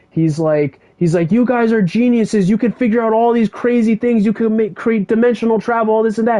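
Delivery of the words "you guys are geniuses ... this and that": put-on high-pitched kid voice, yelling rant. Retelling a comic scene where a kid confronts researchers: imitating a kid yelling. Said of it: "he's yelling at them".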